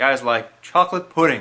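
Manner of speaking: ordinary delivery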